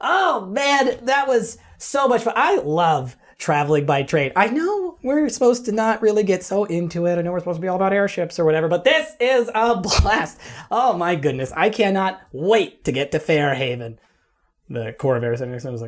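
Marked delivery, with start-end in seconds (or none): 0.0-14.0 thrilled, bubbling-over, high-pitched excited chatter. A halfling character talking among fellow travelers: excited halfling voice. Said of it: "He's just just so excited about everything".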